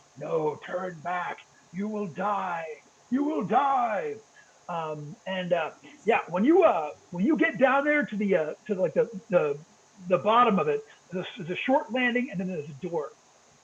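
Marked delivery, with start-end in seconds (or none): 0.2-4.2 whispering voice, lower. Voicing the whispering heard on the basement stairs: whispering voice. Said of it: "you start hearing that whispering again".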